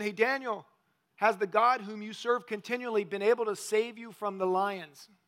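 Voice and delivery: ordinary talk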